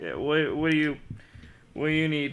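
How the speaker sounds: put-on drunken voice. Voicing a man who stumbled drunk into bed, answering someone kneeling beside it: drunk man voice. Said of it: "this dude has been on the sauce".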